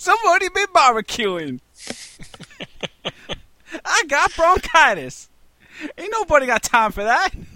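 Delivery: high laughing put-on voice.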